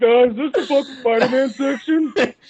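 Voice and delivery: dim-witted, hapless tone. Retelling how others saw him asking for comics: imitating a hapless idiot. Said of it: "the most hapless fucking idiot".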